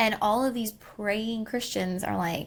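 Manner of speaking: usual speaking voice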